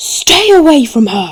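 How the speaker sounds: frantic hysterical yell, very high and loud. Voicing a woman in hysterics who points a sword at another character: hysterical yelling. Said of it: "just yells".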